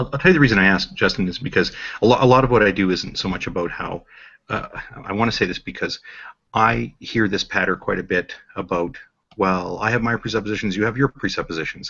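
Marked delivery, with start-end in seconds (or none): 9.4-11.9 play-acted snotty, sneering, dismissive tone. Quoting a remark often heard about presuppositions: imitating a snotty, dismissive tone. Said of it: "I say that in a very snotty and dismissive tone".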